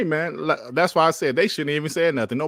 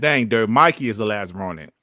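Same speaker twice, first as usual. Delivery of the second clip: ordinary delivery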